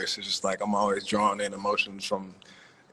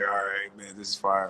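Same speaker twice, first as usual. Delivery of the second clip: super monotone, dead flat, low voice. Retelling a reaction with headphones on: imitating a super monotone low voice. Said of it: "super monotone, like, low voice".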